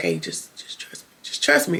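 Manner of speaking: sneaky, hushed whisper on the sly. Retelling a TV episode scene where one character secretly reassures another: imitating a whisper. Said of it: "River is whispering to him, like, on the sly".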